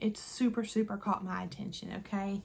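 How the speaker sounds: normal talking voice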